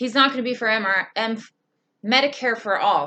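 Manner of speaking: stumbling, stuttering, tripping over the words. Speaker criticizing a politician's funding and votes: stuttering. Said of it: "I'm stuttering today".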